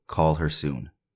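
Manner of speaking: ordinary talk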